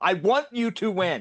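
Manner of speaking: said loudly and clearly. Telling another speaker you want them to win: loud, clear voice. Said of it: "You said that with a loud, clear voice".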